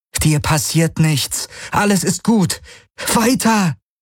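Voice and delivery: trembling, unsteady voice. Kirai urges the unwilling Ara onward, in a trembling voice. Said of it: "befahl Kirai ihm mit bebender Stimme".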